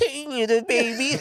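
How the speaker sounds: put-on elderly man voice, pitched very high. Describing the voice he'd find for playing an old man, old man voice. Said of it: "I'm gonna try to find a voice like".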